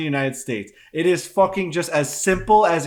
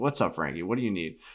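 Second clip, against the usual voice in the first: drowsy, sleepy, just-woken-up voice; 9 semitones lower, 9 dB quieter than usual. Imitating a mortgage agent answering a late call: sleepy voice. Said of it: "You can hear the sleep in their voice".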